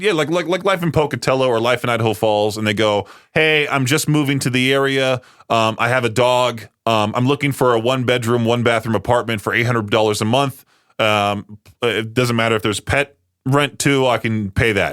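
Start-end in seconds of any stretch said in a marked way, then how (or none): none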